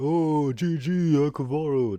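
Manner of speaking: very slow, sneering taunting voice. Retelling what an opponent said after winning: mocking imitation of a noob. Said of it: "that shit-ass noob is all like".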